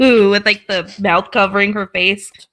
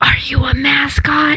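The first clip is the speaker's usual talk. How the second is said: whispering, higher; 5 semitones higher than usual. Asking a character in a whisper whether he is a mascot: whispering. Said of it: "I whisper to him".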